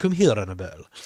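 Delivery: put-on deep, thick Hungarian accent, vampire voice. Describing a vampire film scene, quoting the vampire's line: thick hungarian accent. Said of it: "he's got the thick accent from like Hungarian kind of accent".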